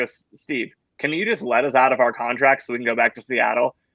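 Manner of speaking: usual speaking voice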